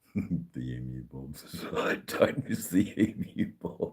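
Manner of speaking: soft, laughing through the words.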